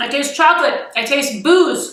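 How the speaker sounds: muffled words pushed through a full mouth. Tasting the finished Valentine's Day dessert, talking with mouth full. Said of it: "I'm eating with my mouth full".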